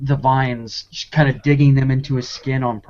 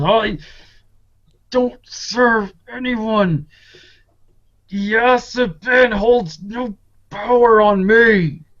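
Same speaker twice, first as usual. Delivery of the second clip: deliberate, very slow roar, pitched high; 9 semitones higher, 3 dB louder than usual. Game master voices a figure whose leg a player stepped on, roaring in character. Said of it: "he roars out and just goes".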